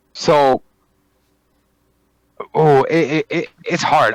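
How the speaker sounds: stuttering, stammering speech. Discussing whether Alexa is in control of everything: stuttering. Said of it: "Wow, I'm stuttering today".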